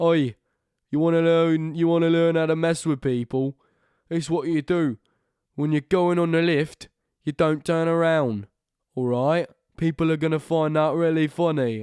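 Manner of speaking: put-on generic British accent, loud and high. Speaker performs what he calls his British person, in a put-on British accent. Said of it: "It's my British person".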